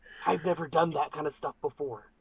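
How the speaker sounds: whispering in a character voice. Whispering to a character after turning him around: whispering in character. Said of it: "I just kinda whisper to him".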